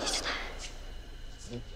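slow, soft, conspiratorial whisper.

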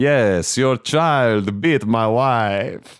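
spooky, drawn-out vampire voice. Recalling playing a vampire, the speaker delivers the joke in a vampire voice. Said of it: "so I was talking like this".

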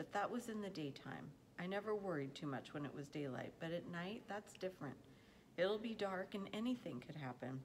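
ordinary delivery, nothing marked

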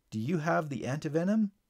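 ordinary talk

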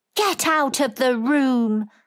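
raging, slow, drawn-out, loud shout. An invalid sits up in bed in a rage, shouting at her. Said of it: "he shouted".

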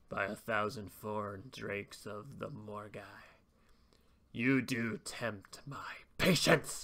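low, scornful, sneering villain voice. Reading game flavor text aloud, voicing the traitor Elkron: Elkron sneering. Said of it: "he sneers".

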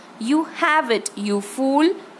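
hissing, spat-out, hissed delivery. The second witch snaps at another witch during their quarrel, hissed. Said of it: "hissed the second witch".

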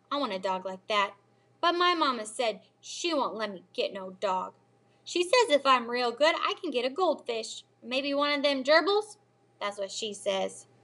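ordinary delivery, nothing marked

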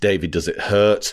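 ordinary delivery

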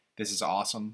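ordinary delivery

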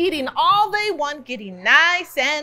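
ordinary delivery

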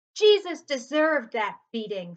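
very loud, snarling voice. Narrator reading an old man in an angry crowd; snarled. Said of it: "snarled an old man".

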